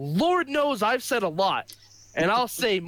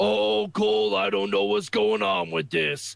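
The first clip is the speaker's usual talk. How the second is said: bad put-on announcer voice. Imitating a wrestling announcer laughing off a segment: bad Booker T impression. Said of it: "that's a bad Booker T impression".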